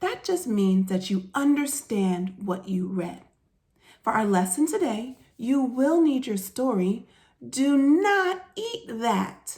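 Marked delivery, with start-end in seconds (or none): 7.5-9.6 eager, excited, drawn out very slowly. Teacher reading a sentence ending in an exclamation mark: excited. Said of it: "I said that with excitement".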